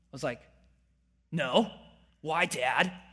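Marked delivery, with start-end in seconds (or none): 1.3-2.9 put-on young teenage-kid voice. Retelling his father asking about a left-handed layup, answering in his teenager voice. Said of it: "That's my teenager voice".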